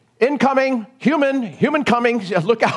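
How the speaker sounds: mock alarmed call, high and startled.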